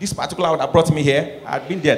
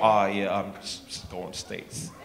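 put-on American accent, lower and quieter; 7 semitones lower, 11 dB quieter than usual. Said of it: "start speaking like American".

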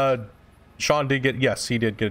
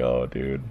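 very low mock groan of dismay. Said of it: "It's like".

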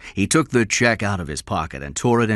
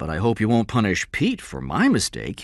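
plain

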